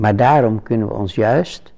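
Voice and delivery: ordinary talk, nothing marked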